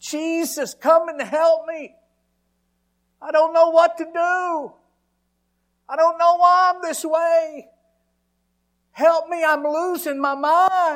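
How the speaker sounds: desperate, very high, very loud full-lung shriek. Recounting a past breakdown and calling on jesus for help, retelling screaming at the top of lungs. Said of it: "I'm screaming to the top of my lungs".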